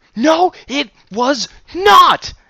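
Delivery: shrill, deafening, very high, very loud, drawn-out shriek. Ginger cuts off her father mid-sentence, screeching. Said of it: "Ginger screeched".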